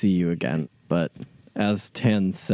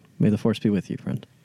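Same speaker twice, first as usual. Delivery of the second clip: voiced stage half-whisper, close and intimate. Hugging a departing character tightly in the game scene, half-whispering. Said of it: "I will hug him tightly and whisper".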